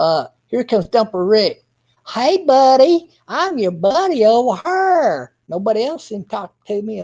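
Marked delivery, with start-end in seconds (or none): 2.1-7.0 put-on ingratiating sweet talk, higher and slower. Acting out Rick sweet-talking several people at once: mock sweet-talking. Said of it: "sweet talking several people in different directions".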